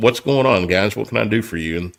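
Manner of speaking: put-on laughing while talking. Retelling answering the door to a group of cops: retelling own laughing reply. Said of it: "laughing, like".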